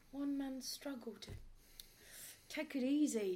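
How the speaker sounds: put-on impression voice. Question Master repeating the question once more, in an impression of someone unnamed. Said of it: "I do like the impression there".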